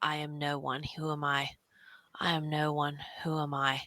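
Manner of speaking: low, slow mutter under the breath. Voicing a character who repeats words to herself: under her breath. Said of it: "you just hear her say under her breath".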